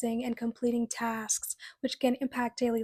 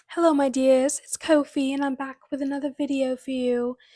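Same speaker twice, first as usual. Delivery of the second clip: loud, terrible fake British accent; 6 dB louder than usual. A video host greets viewers at the start of a video: bad british accent. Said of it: "I know it was a terrible impression".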